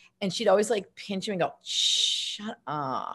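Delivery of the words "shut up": lazy, slow, breathy, drawn-out hushed whisper. Recalling how she played a part, speaker mimics a girl, imitating a slow-talking girl. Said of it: "she talked really slowly".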